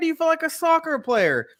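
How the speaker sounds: high-pitched, mocking put-on voice. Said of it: "I'm like".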